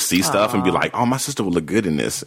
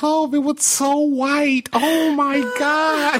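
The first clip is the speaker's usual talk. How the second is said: very high, squealy voice pitched way up. Retelling what a man's wife said, doing a Shirley impression. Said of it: "That was a great impression of her voice".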